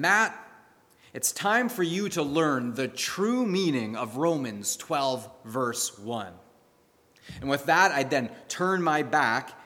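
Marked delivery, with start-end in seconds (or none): none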